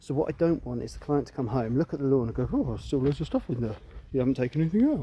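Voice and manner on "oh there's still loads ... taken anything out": odd put-on voice with swooping pitch. Imitating a client complaining about the lawn in a put-on voice. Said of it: "I don't know why I did that voice".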